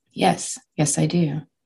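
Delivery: ordinary delivery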